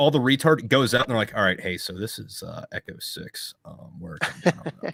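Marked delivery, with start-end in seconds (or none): 1.3-4.9 whispered, hushed, serious pilot radio voice. Imitating a pilot after the idiot switch flips: imitating a pilot on the radio. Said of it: "They flick the idiot switch".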